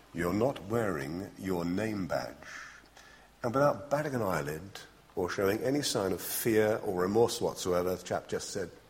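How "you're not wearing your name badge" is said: low, rather menacing commander's tone. Retelling a base commander inspecting new sub-lieutenants, in a mock-menacing tone. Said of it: "he said in rather menacing tone".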